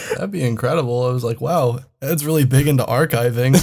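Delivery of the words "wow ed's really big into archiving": normal talking voice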